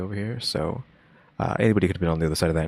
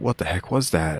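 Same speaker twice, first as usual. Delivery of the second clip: mock-exasperated tone at the end. Reacting to a clip, repeating a man's odd line, mimicking exasperation at the end. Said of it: "With like an exasperation at the end".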